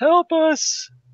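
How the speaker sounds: very high, very loud, shrill yell. Playing a tabletop character as a demon approaches, yelling for help. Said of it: "and I yell".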